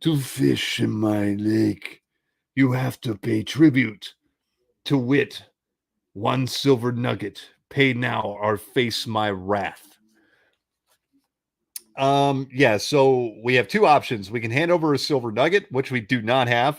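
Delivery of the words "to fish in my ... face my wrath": slow, drawn-out, menacing, evil, greedy dragon voice. Reading the text aloud, the speaker voices Voss the sea dragon with evil greed. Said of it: "but with evil greed".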